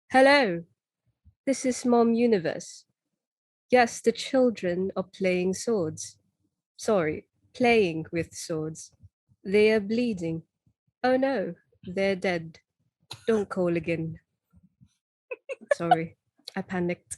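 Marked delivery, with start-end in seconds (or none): 0.1-14.1 put-on British accent. Asked for an impression, voicing a character on the phone to a mom: British accent as Garnet. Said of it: "Can you do an impression?".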